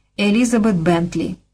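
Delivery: plain reading voice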